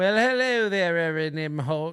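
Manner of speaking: badly done, failed put-on transatlantic accent. Host echoing a caller's greeting, in a bad fake transatlantic accent. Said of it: "You're not in a Western".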